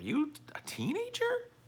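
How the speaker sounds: very high, squeaky, mocking voice.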